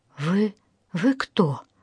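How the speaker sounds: trembling, quavering voice. Lisa, just recovered from a blow, asks the two men who they are: trembling voice. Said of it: "дрожащим голосом проговорила Лиза".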